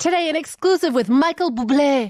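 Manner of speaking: put-on aggressive French accent.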